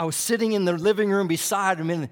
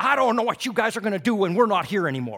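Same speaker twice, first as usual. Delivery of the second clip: mock-grumpy woman voice, higher and faster; 3 semitones higher than usual. Retelling walking in on a woman who had been muttering, imitating a grumpy woman. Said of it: "grumpy as can be".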